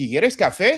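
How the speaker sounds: pitch rises at the end on café. Spanish question example, rising pitch at end on café. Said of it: "I hear the rise in, in, in uh, the intonation here at the end".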